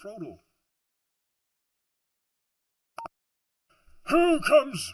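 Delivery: very high-pitched voice. Reader doing character voices aloud, attempting Frodo voice. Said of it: "I'm trying to do Frodo here".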